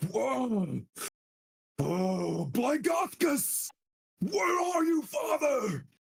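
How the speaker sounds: very high, slow, drawn-out, furious spectral cry. Voicing a risen ghost calling out for the father who betrayed him: angry ghost voice. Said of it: "As he echoes through the chamber and you see him in his anger".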